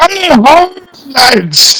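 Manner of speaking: sudden, loud gruff shout, pitched very high. A game master voices an unseen figure yelling from behind a wall: loud gruff yell. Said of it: "loud, gruff voice suddenly yell out".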